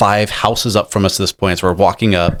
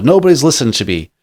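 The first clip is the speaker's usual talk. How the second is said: mock amped-up man's shout, as loud as possible, pitched up; 5 semitones higher than usual. Recalling an amped-up man he walked to safety, retelling a shout as loud as possible. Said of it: "just as loud as he can".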